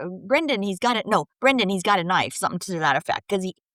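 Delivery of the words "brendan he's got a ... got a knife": ordinary talk, nothing marked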